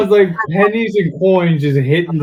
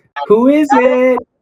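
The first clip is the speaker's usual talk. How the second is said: put-on voice, pitched way up; 8 semitones higher, 3 dB louder than usual. Jerry in a toilet stall answers a knock at the door, high-pitched voice. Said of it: "say in a high-pitched voice".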